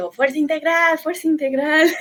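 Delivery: high, loud, play-acted shout. Retelling spotting a man at an airport and calling out: retelling a shout. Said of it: "me lo encuentro ahí y le grito".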